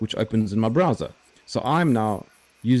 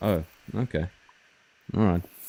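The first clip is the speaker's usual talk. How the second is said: deflated, disappointed, let-down voice; 3 semitones lower, 3 dB quieter than usual. Reacting when told the name can't be moved, sounding disappointed. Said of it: "You sounded so disappointed".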